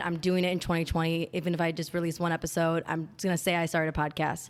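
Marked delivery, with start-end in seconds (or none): none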